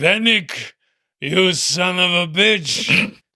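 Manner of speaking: hefty, big, burly strongman voice. A game master voices a strongman calling out from behind the players, large burly voice. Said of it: "a large, burly voice go".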